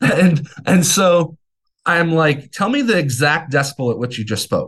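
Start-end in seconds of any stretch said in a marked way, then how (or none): 2.5-4.7 put-on defensive, pissed-off, pointed anger. Retelling his reply to the doctor at the hearing test: imitating his own angry demand. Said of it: "he saw that I'm pissed".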